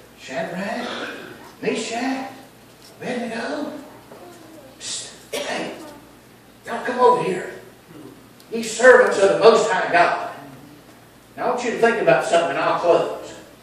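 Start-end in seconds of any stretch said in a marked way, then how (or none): 0.2-10.4 meek, humbled voice calling out. Speaker imagining the king calling the three men over: put-on humble Nebuchadnezzar voice. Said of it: "He's just a little bit more humble".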